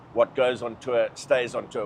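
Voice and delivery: ordinary talk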